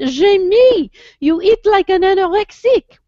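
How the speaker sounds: put-on cute little French accent, very high pitch, slow. Quoting what your husband used to say to you, imitating his cute little french accent. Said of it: "with his cute little French accent".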